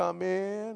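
mournful, sad, plaintive acted voice. Retelling knocking on a door and hearing a voice from inside: imitating a sad, plaintive voice. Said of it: "Sad, plaintive voice".

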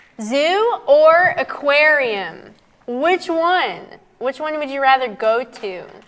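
slow, aggressive, needling sarcastic tone. Asking the first quiz question of the live chat: sarcastic, aggressive question. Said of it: "That seems so sarcastic".

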